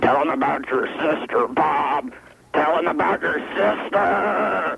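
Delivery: put-on irate, badgering, demanding voice, slow and high. Doing impressions of callers to Bob, here the angry guy: mock-angry, demanding caller. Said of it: "here's the angry guy".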